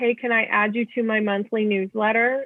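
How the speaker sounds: normal talking voice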